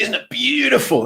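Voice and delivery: very high nature documentary presenter voice. Talking about wildlife TV hosts, imitating them in a nature documentary host accent. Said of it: "do it in the accent that you you expect".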